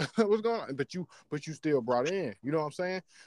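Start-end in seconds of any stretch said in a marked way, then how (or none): 0.0-0.7 high, sudden, surprised, startled outburst. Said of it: "You like".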